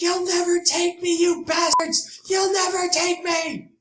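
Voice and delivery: very high, loud, drawn-out shrieking scream. Voicing someone heard from inside during a shooting: screaming. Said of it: "you hear a scream from inside".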